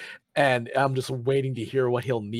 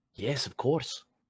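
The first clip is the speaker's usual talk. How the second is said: hushed whisper under the breath; 4 dB quieter than usual. Answering another character who asks if they're here, whispering. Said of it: "And I just kind of whisper".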